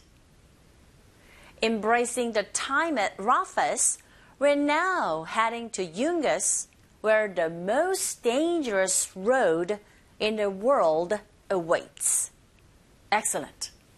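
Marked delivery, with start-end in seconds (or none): 1.6-12.3 very slow, careful, deliberate reading. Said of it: "문장에서도 give a shot".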